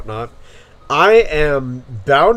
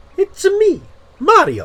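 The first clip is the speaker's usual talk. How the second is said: very high cartoon voice with big pitch swoops. Showing off which cartoon voices he can do, doing a Mario voice. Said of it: "I can do Mario actually really well too".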